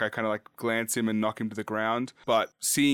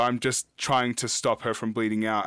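usual speaking voice

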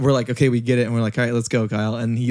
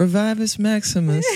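very high, limp, underwhelming incantation; 10 semitones higher than usual. Retelling a friend's recorded spell take, imitating an underwhelming spell. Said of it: "super underwhelming".

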